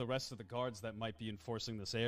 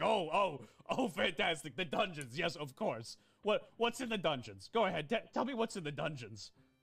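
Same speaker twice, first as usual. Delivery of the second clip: pompous, blustering self-importance, higher pitch; 7 semitones higher, 4 dB louder than usual. Voicing Max in the game, puffing his chest: puffing his chest, pompous. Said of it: "puffing his chest".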